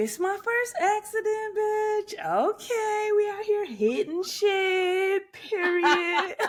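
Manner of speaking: put-on very high, proud, triumphant gloating, "shit" drawn out. Retelling what a woman said at a freeway accident, mock-celebrating like a prize winner. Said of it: "like you just motherfucking won a carnival game".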